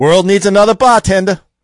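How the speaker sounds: put-on Boston-accented delivery. Friends trade movie quotes and name the film: Boston accent from The Departed. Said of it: "you got that Boston accent down".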